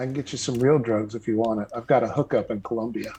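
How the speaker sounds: discreet, conspiratorial half-whisper. Half-whispering discreetly to another character in a game scene: half-whispering in character. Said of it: "and I'll whisper to him".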